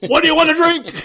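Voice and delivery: very loud, high-pitched drill-sergeant scream. Retelling how he interrogated them about drinks: imitating a screaming drill sergeant. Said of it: "like a drill sergeant, screaming every question".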